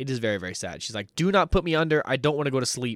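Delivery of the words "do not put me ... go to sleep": mock begging, scared and shocked. Retelling a patient begging the doctor not to sedate her: imitating a scared plea. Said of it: "she's scared of something".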